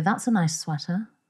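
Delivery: acted, passive-aggressive jab sounding like praise. Imitating an annoyed woman complimenting her friend: passive-aggressive tone. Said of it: "With just the right tone".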